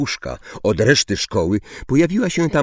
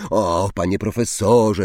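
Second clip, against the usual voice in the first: usual speaking voice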